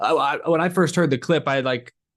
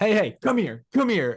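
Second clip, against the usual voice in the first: high-pitched, snarling, put-on yell; 9 semitones higher than usual. Act out the soundbite of Joey Logano calling someone over, imitating Joey Logano yelling and snarling. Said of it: "just yelling at you to come here, like snarling at you".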